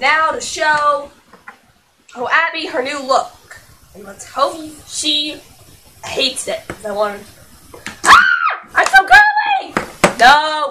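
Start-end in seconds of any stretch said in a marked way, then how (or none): 8.0-10.7 put-on very high, loud, shrill girly doll squeal. Playing with dolls, showing Abby her new look: Abby doll voice. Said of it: "She doesn't talk like that".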